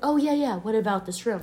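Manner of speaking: ordinary talk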